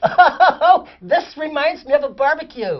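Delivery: squeaky, high-pitched voice. Recounting a guy on a film set speaking in a high, squeaky voice. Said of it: "He had this really high, squeaky voice".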